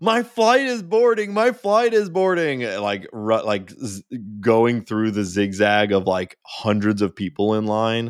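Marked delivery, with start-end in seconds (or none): 0.0-2.6 very high, loud, frantic, panicked yell. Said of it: "runs through customs screaming".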